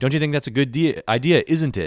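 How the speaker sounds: put-on odd British accent. Retelling how a man he knew talked, imitating a weird British-sounding accent. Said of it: "he had a weird accent".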